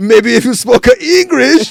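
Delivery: put-on shrill, very loud Japanese accent. Retelling a South Park argument over moving a restaurant, use the put-on accent shared by both arguing men. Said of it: "they're both talking in the same accent".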